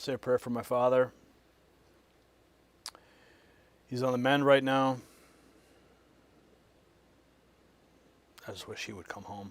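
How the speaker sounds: voice cracking with emotion. Speaking to the audience before moving to the next story, choked up. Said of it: "I'm getting all choked up here".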